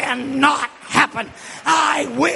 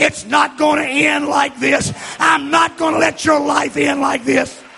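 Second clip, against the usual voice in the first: put-on impassioned, pleading, fierce, urgent cry. Retelling what they screamed to a man on the phone, retelling a scream. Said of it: "And I screamed".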